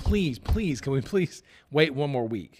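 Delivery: mock earnest, imploring, begging tone. Retelling how someone came in asking for one more week: imitating someone begging. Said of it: "begging and pleading".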